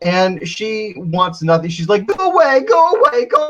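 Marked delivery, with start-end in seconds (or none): 2.1-3.5 put-on acted, very high, blubbering sobbing like a baby. Retelling a scene where a character cries at someone: mock crying like a baby. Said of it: "crying like a baby".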